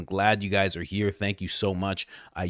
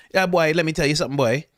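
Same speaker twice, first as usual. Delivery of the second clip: Trinidadian accent, pitched a bit higher; 7 semitones higher than usual. Showing listeners how people talk in Trinidad: Trinidadian accent. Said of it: "That's how they talk".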